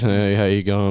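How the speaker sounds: flat, expressionless delivery. Speaker imagining everyone talking the same, demonstrating a flat monotone voice. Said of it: "Everyone just spoke in a monotone voice".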